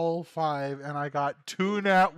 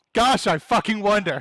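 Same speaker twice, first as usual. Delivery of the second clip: very loud, shrill, fed-up annoyed outburst; 5 semitones higher, 8 dB louder than usual. Answering who failed three or more saving throws: annoyed. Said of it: "Sorry, I'm annoyed".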